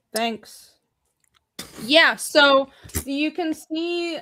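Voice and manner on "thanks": sarcastic-sounding delivery. Thanking someone for complimenting a hat: sarcastic-sounding thanks. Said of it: "It just sounded very sarcastic".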